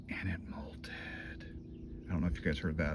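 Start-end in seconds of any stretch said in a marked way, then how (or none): 0.1-1.4 very quiet, hushed, barely voiced whisper. Speaker showing viewers a favorite tarantula, whispering. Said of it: "I was whispering".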